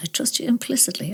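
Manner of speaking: put-on very quiet speech. Retelling a warning given to Daniel: retelling saying it very quietly. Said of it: "very quietly to Daniel".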